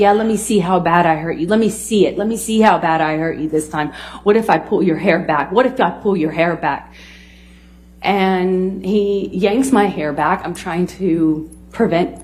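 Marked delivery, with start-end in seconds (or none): none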